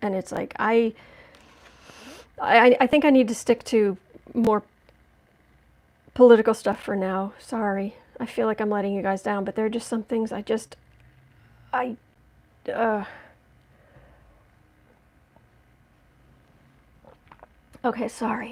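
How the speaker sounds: tearful, choking up, voice breaking. Speaker apologizes to the audience for letting them down, tearful and choking up. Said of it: "and I'm tearing up".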